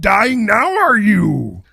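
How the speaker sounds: loud, booming, high, swooping little-creature voice. Speak to someone who is dying, in a Yoda-like voice. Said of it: "It's like a Yoda almost".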